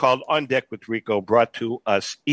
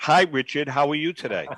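ordinary talk

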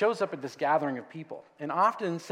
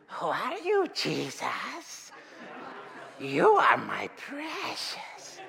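sly, high-pitched hissing demon voice; 9 semitones higher than usual. Mocking how demons in biblical films are voiced, in a Gollum voice. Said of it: "they all sound like Gollum".

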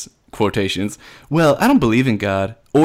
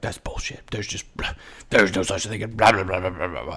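soft, muttered grumbling to himself; 3 semitones lower, 8 dB quieter than usual. Retelling what someone did whenever the teacher mentioned spirituality: imitating someone muttering. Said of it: "he would just mutter to himself".

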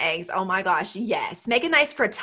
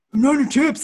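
put-on full-mouth voice, higher pitch; 5 semitones higher, 4 dB louder than usual. Retelling catching Jeff in the chips, giving his reply: imitating Jeff talking mouth-full. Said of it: "his mouth is obviously full of chips".

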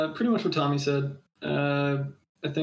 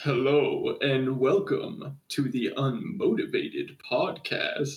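put-on podcast-intro announcer delivery. Recalling how a co-host used to open their podcast, in an announcer voice. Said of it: "put on a whole like announcer voice".

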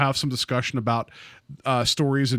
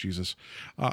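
normal talking voice

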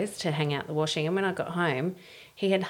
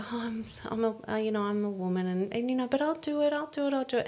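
manipulative, hesitant, deliberately faltering delivery; 5 semitones higher, 4 dB quieter than usual. Acting out women hinting so their husbands offer help: imitating a manipulative tone. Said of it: "they actually control their men in that manipulative way".

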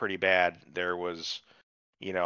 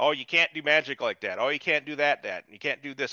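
mock nagging, scolding tone; 6 semitones higher than usual. Complaining about a show, the speaker acts out a character nagging another; mock nagging. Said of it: "He's just nagging her about all the shit".

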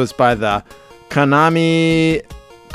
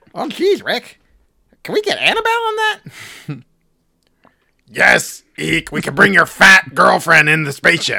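put-on cartoon cat voice; 6 semitones higher than usual. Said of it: "it was really just my Eek the Cat impression".

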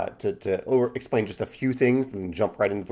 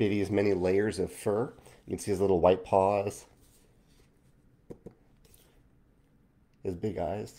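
emotional, moved, quieter delivery; 5 dB quieter than usual. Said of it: "I figured I was going to get emotional".

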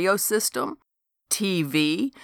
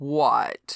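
complaining moan; 3 semitones lower than usual. Replying to a friend's hope that something will turn up, moaning. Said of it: "Harry moaned".

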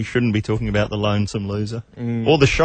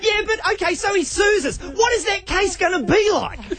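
put-on shrill yell, pitched very high. Recounting an argument with lawyers over a comedy bit, retelling yelling at lawyers. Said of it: "I'm yelling at the lawyers".

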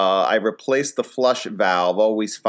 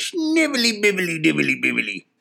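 put-on high, sing-song old-time gold prospector voice; 7 semitones higher than usual. Doing a couple of impressions, the speaker brings back the 1849 gold prospector voice. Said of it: "like an 1849 gold prospector character".

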